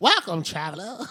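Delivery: storybook gnome character voice. Imitating a musician who sometimes sounds like a gnome, gnome-like voice. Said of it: "sounds like a gnome sometimes".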